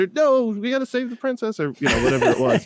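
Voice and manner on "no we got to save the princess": high, eager call-out. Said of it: "be like".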